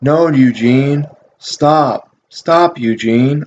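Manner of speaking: very slow, lifeless, flat deadpan delivery. Retelling a father telling his son to stop: imitating a deadpan plea. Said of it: "so just deadpan".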